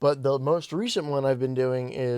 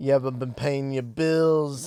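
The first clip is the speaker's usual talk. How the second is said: put-on mafia mobster voice. Joking that mobsters threaten Shrek: put-on mafia mobster voice. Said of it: "the mafia shows up in Shrek".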